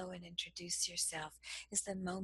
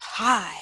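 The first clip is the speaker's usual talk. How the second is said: very loud, hostile, aggressive tone; 15 dB louder than usual. Demonstrating different tones of voice for a greeting: aggressive greeting. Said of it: "Is it going to be aggressive?".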